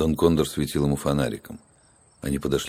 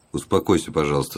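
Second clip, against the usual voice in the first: usual speaking voice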